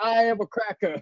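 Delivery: proud high yell. Urging the others to yell the phrase too, showing them with a proud yell. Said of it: "yell it proud".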